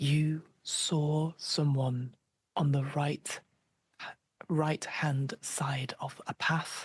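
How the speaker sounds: loud whisper. Voicing a frightened character asking the group about a sighting: big whisper. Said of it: "she says in a big whisper".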